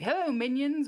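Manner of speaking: grating, annoying little robot voice, very high squeak. Describing an annoying little robot that chases after you: Claptrap voice. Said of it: "annoying little, uh, robot that sort of chases after you and is like".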